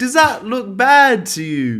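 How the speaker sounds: put-on New Zealand accent, very high, loud, slow, booming. Quoting a man looking at a shot from his film, imitated Kiwi accent. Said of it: "he goes in a Kiwi accent".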